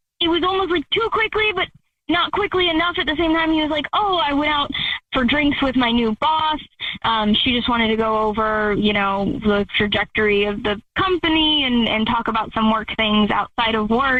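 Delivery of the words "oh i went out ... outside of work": ordinary talk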